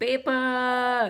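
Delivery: loud, high newspaper-seller yell. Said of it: "he would yell".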